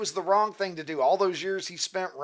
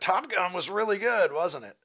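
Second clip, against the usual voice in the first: normal talking voice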